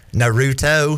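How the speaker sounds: put-on drawled, stretched-out country accent. Showing how people with country accents say it: country accent on 'naruto'. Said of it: "people with country accents say, because they say it like Naruto".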